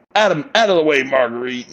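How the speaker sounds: put-on angry, cross, irritated, forceful delivery. Retelling a dinner cutscene, a character getting angry: imitating angry Jack. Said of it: "he's getting all pissed off".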